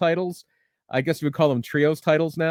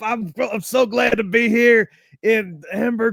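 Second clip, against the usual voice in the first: put-on fired-up voice, higher; 7 semitones higher, 4 dB louder than usual. Retelling meeting wrestlers and fans, imitating fired-up Tommy Rich. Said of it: "Tommy Rich is just on".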